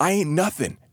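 words gasped out at a very high pitch. A bleeding young man answers Morley's shouted question, gasping. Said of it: "he gasped".

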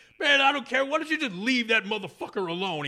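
acted-out scream. Acting out what the sleeping guy yelled near the train, retelling a scream. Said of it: "He starts screaming".

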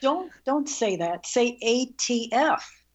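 ordinary delivery

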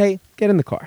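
mock nice, easygoing fatherly tone. Retelling what dad said through the car window: imitating dad, very nice, not angry. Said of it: "In a very nice, not angry".

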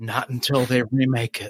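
mock, put-on whisper. Joking about a reply to fans who shout for an episode: mock whisper. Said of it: "And I'll look down and whisper".

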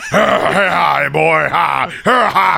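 rough, drawn-out, chuckling. Talking about a movie's cast, doing a Jason Momoa impression. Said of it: "that's my impression of him".

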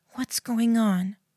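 whispering. Reading a story, she hugs the crying narrator and asks, whispering. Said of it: "she whispered".

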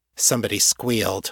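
ordinary delivery

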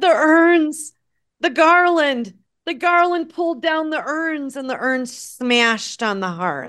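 voice on the verge of tears. Retelling what he said on answering the door, imitating someone almost in tears. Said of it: "He was almost in tears".

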